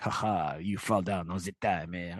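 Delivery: jokey, comical, bad fake French accent. Imagining how a book bully taunts a kid: comical bad french accent. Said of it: "a comical bad French accent in this character".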